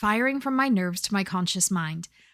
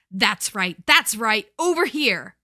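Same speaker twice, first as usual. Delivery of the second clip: overly demanding, pushy, commanding masculine voice; 4 dB louder than usual. A familiar man calls a growling dog away from her, overly demanding masculine tone. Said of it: "masculine speaker with an overly demanding tone".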